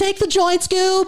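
very high cartoon sidekick voice. A comedian doing Shaggy on request, Shaggy impression. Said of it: "Do Shaggy really quick".

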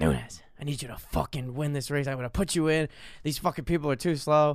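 put-on whispering voice. Retelling how a swim coach pulled him aside: imitating a coach whispering. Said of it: "whispering in my ear".

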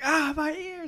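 very high-pitched crying out. Joking about a new villain in a Batman movie, imitating Batman crying out. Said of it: "And Batman's just like".

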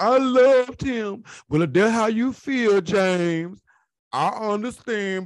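slow, pitiful, simpering voice. Speaker acting out how April will answer, in a mock-pitiful April impression. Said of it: "You sounded like one pitiful bitch".

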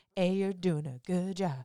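soft, stock text-to-speech app reading voice. Recalling a voice heard in the head, doing the TikTok voice. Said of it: "I just heard that TikTok voice in my head".

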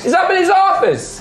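very high halfling voice.

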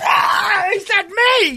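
very high, loud, thrilled, starstruck.

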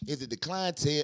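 plain

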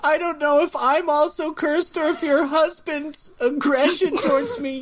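weeping, very high, tearful crying speech. Hotel worker telling a woman about her husband's aggression, crying while talking. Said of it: "and I'm making you cry".

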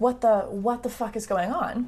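normal talking voice

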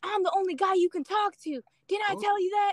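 mock furious ranting. Retelling what a man said when he got angry: imitating an angry man. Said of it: "he gets so angry with me".

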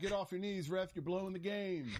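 mild, high taunt. Retelling what a fan yelled about the refs: imitating a fan screaming at the ref. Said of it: "He was screaming".

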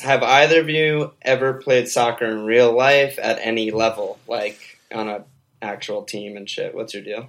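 plain

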